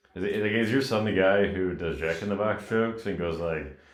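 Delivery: ordinary talk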